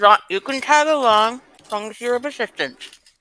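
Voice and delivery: words pushed out while chewing, mouth full. Speaking while eating crust: speaking with mouth full. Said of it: "I hope you understood me while I was eating crust".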